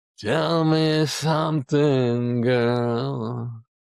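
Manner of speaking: put-on hoarse, raspy drunk voice, "girl" drawn out. Retelling a drunk man at a piano at four in the morning, in a raspy voice. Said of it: "he's got the raspy voice".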